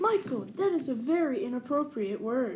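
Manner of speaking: ordinary delivery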